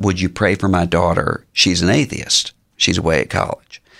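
imitated whispering. Retelling a woman's prayer request after a church service: imitating someone whispering. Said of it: "then she whispered".

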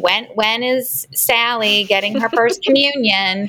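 slow, put-on elderly grandparent voice. Quoting grandparents asking about a child's first communion, grandparent voice. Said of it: "I love the grandparent voice".

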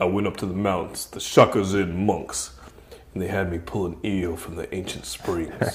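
low, hushed, soft, quiet grave voice. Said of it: "He's like".

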